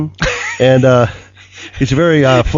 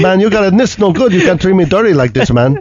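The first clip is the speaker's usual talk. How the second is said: put-on Canadian accent, audible, pitched higher; 5 semitones higher than usual. Retelling what a man told him on the phone, in a put-on Canadian accent. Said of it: "I think that's a Canadian accent you're doing".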